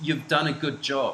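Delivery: normal talking voice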